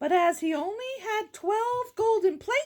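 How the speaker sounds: ordinary delivery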